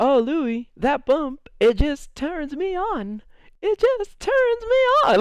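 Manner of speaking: put-on high, drawn-out, swooning girly voice. Retelling how he voiced a girl reacting to his bump, imitating his put-on voice of a girl. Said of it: "he started doing this voice".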